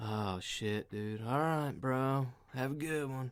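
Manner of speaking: put-on stoned, high-sounding man's voice. Retelling what a stoned truck driver said: imitating a stoned man. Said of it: "Just fucking baked out of his mind".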